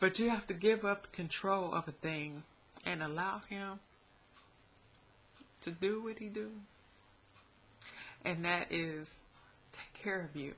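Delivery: choking up, on the verge of crying. Urging listeners to give up control to God, choking up, about to cry. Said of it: "And I'm about to cry".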